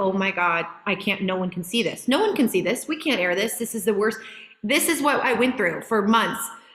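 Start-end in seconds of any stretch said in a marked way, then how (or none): 0.0-4.2 crying, tearful, panicked, despairing lament. Retelling nights of watching dailies, imitating own past crying. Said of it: "And then the next night crying".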